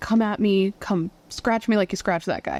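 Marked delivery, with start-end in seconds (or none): none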